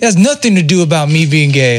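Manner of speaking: put-on anger, sounding genuinely mad. Retelling his dad's reply to a question, imitating real anger. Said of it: "Like real mad".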